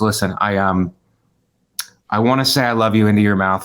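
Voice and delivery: very serious delivery. Retelling what Katie used to say: imitating Katie speaking very seriously. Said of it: "she did it very seriously".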